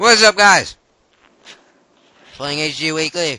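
very loud voice, spoken through a full mouth. Greeting the guys while eating tacos, talking with mouth full. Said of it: "I'm eating tacos, so my mouth is full".

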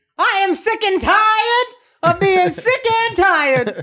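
very high, slow voice, every word stretched out. Challenged to do one impression, the speaker does a Loretta Devine voice. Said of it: "One impression. Loretta Devine".

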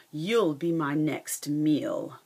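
slow, menacing, lion-like growl. A lion holding a mouse that interrupted his nap speaks to her; growling. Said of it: "the lion growled".

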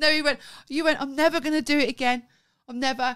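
high, loud, laughing through the words.

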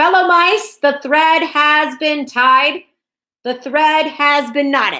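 loud, high, ringing rallying shout. The thread master steps back and turns to the fellow mice, shouted. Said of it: "turned and shouted".

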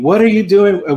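put-on Trinidadian accent. Retelling how she rebuked you outside the gym in front of friends, imitating a Trinidadian accent. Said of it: "with her Trinidadian accent?".

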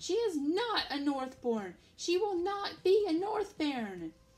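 loud, high, distressed scream. Narrator reads a woman's line, screamed at the narrator: screaming. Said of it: "she screamed at me".

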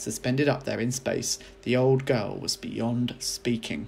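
plain

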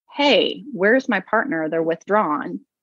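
usual speaking voice

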